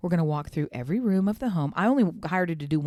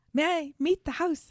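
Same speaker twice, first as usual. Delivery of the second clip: voice raised very high, piping; 11 semitones higher than usual. Imagining a home organizer arriving: Marie Kondo impression. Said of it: "the Marie Kondo impression".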